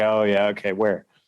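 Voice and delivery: skeptical laughing tone. A father retells answering his six-year-old who spotted a deer, retelling an amused laugh. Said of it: "And I just kind of laughed and was like".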